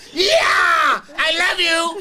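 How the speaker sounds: very loud, wild, excited, drawn-out yelling. Retelling throwing roses at girls at a show: retelling own wild excited yelling. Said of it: "I'm bugging".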